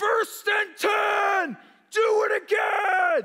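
acted-out, ear-splitting, very high stadium crowd yell. Retelling what a player's dad yelled from the stands, imitating a very loud shout. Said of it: "I don't even know how his voice could get this loud".

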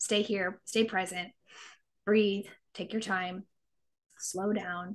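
soft, calming voice.

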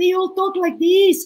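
high-pitched voice. Speaker contrasts their own voice with Latinas', demonstrating a high-pitched voice. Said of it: "all the Latinas have a high voice".

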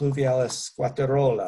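Latin name in a rolled Italian accent.

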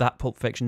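heavy stress placed on the word that. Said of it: "not that Pulp Fiction".

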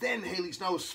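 ordinary delivery

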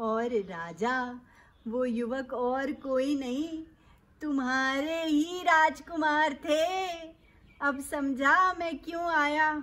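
deep, low-pitched character voice. Narrating a story, the Brahmin speaks to the king; speaking as the Brahmin. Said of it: "अरे फिर एक दिन राजा के द्वार में एक ब्राह्मण, एक पंडित जी आए। Mm-hmm. नाम अपना [name] बतलाए। / नाम अपना [name] बतलाए। / उसकी बात भी नहीं कर रही मैं।".

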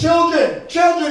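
mock yelling out. Retelling Jesus calling from the seashore to the disciples fishing, retelling a yell. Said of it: "And he yells out to them".

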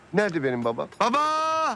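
shouting. In a drama, someone arrives at a workplace asking for their father, shouting. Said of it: "Bağırma kardeşim, ne bağırıyorsun?".

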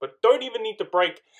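high, loud shout. Recounting a race moment on stream, shouting. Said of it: "I'm sorry I'm shouting".

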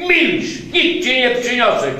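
loud shout with fear underneath. A boy shouts back at an octopus demanding food, shouted. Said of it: "Krzyknął Jacek".

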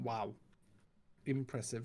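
very low, hushed, flat, barely impressed tone. Answering a friend's boast with flat, unimpressed deadpan. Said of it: "sound at least a little bit more impressed".

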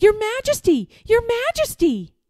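very high, loud, swooping shouting, calling out. A young man comes up behind the king, who pays no attention; shouting. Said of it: "Shouted Eric".

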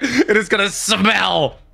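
evil cartoon villain voice, very slow. Complaining that the pillow will smell, like an evil Disney villain. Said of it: "You said it like a Disney evil person would".

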